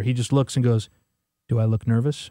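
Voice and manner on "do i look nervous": low, deadpan delivery. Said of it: "he's the most deadpan guy ever".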